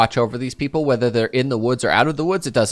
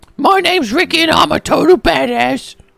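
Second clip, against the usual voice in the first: very high, loud, crude little creature voice; 5 dB louder than usual. Voicing a little creature that came pre-programmed with rude phrases: crude creature voice. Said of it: "that's a very good impression".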